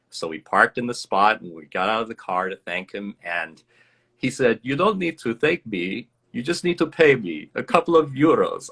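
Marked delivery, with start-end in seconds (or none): 4.6-8.7 put-on speaking with Albanian accent. Acting out a man who pointed the speaker to a parking spot and was thanked, put-on Albanian accent. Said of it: "that's my best Albanian accent".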